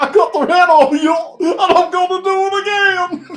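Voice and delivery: pitched way up and loud. Joking about Goofy being tried for homicide, the speaker quotes him: Goofy voice. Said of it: "it was like Goofy goes".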